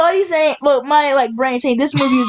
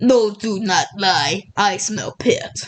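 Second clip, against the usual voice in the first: odd put-on Russian accent, very slow drawl; 5 semitones lower than usual. Retelling what a man with a strong nose says, in a weird russian accent. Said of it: "he has like this super weird Russian accent".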